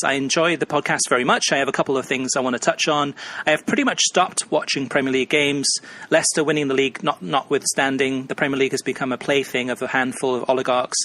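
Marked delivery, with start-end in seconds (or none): none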